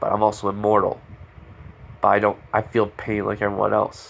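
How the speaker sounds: normal talking voice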